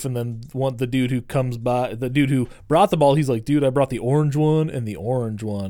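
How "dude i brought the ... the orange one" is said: plain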